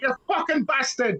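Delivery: play-acted, shouted, shocked outburst. Retelling what their nana shouted in shock, retelling a shout. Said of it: "She honestly shouted like".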